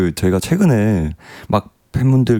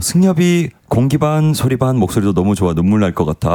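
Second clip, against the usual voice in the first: usual speaking voice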